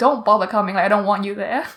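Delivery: put-on angry snapping tone. Retelling snapping at a woman about her graduation, retelling snapping angrily. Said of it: "I snapped. I got mad".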